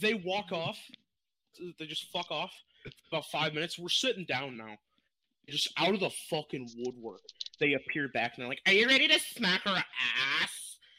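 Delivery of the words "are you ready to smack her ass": loud, slow, deliberate, drawn-out woman's voice. Retelling what a woman asked at the bar: imitating the woman's voice. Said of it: "Stop talking like that".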